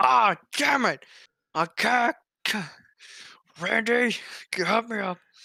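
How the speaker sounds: slow, high, drawn-out wail of pain. Imagining Vince McMahon tearing his quads: imitating Vince McMahon in pain. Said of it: "Vince McMahon was gonna come down and just tear his quads and go".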